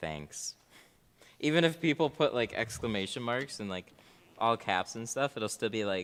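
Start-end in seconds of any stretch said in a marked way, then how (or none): 0.0-0.5 level, flat, monotone robotic deadpan. Showing how their robot voice says thanks: flat robotic 'thanks'. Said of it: "My robot voice is so monotone".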